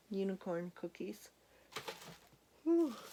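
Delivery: words spoken through a yawn. Speaker showing unicorn items to viewers late at night, yawning. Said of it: "I'm yawning".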